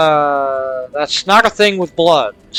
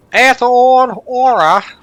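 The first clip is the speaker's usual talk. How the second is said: bad fake British accent, much higher; 7 semitones higher, 4 dB louder than usual. Speaker trying to pronounce a name, in a scuffed fake british accent. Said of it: "Like an Australian trying to do an American doing a British accent".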